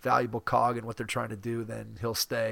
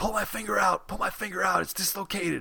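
high-pitched screaming; 8 semitones higher than usual. Retelling a stranger at a pickup game with a dislocated finger, imitating someone screaming. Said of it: "he's screaming at me".

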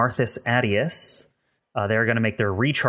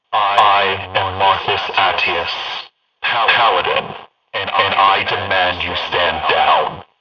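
resonant speaker voice, lower and louder; 3 semitones lower, 7 dB louder than usual. The narrator voices a Paladin heard over all the speakers: resonant Marcus Attius voice over speakers. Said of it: "a kind of resonant voice coming over all of your speakers".

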